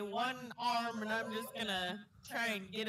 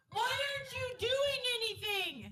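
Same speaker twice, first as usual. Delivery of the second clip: very high, drawn-out, complaining shout; 13 semitones higher than usual. On their turn in a tabletop game, the player's character is yelling at mom. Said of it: "I'm gonna yell at my mom and be like".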